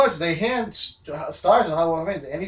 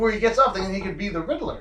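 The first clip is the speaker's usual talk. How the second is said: usual speaking voice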